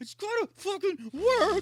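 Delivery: very loud, very high, half furious, half crying. Retelling a game that won't respond, imitating half angry, half crying. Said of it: "half angry, half, like, crying".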